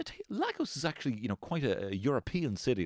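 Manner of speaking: patronizing, condescending, high sing-song tone. Mimicking people just back from a trip abroad, mock-condescending tone. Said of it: "Like you condescending".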